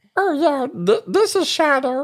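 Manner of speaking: very high, slow talking-dog voice. Showing how they voice their dog Shadow, in a high-pitched Shadow voice. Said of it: "Shadow talks more high pitched voice".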